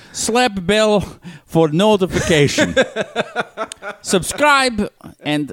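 fake German accent, high. Playing Putin hosting a cooking show: Putin impression slipping into German. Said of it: "I was going to do a German accent".

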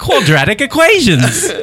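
put-on Australian accent, pitched high. Playing a witch school teacher introducing the lesson, in an Australian accent. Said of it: "now it's Australian".

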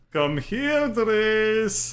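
very high, drawn-out, plaintive sad-cat call. Calling out for Drez after seeing the mark: like a sad cat. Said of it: "He sounds like a sad cat".

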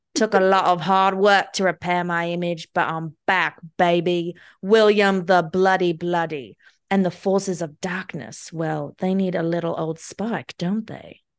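terrible, bad, put-on British accent. Performing a short bit that a listener then praises: terrible British accent. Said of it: "such a terrible British accent".

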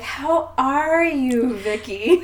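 high, very slow, drawn-out, sickeningly sweet acted voice. Retelling a favorite scene, quoting one woman greeting another: mock sickeningly sweet Elena. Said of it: "really sickeningly, like, sweet voice".

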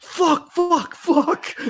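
high, yelped-out screaming. Speaker recounts a car sliding off the road, imitating his screaming. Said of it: "he's just screaming like".

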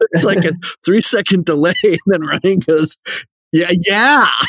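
speaking through laughter. Talking to the group about a Monday event, laughing while talking. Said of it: "I can't stop laughing".

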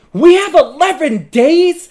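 very loud, very high, piercing, shrill, slow drawn-out yell. Retelling a phone call where Alex reacts to eleven days: imitating Alex's loud yell. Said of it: "it's so loud that all of my coworkers hear".

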